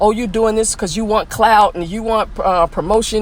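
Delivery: plain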